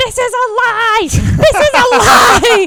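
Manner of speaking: very loud, high-pitched, shrieking scream. Retelling the speaker's mother at the Liberty Bell, imitating someone screaming. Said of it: "decides to take it upon herself to scream at everyone".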